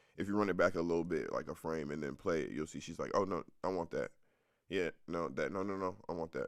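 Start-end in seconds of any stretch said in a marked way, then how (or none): none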